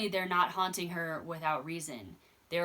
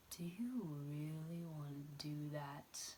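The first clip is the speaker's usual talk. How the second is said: very quiet, slow, soft, drawn-out whisper; 3 semitones lower, 13 dB quieter than usual. Retelling a nurse's line from a movie: imitating a soft whisper. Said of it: "whispering softly".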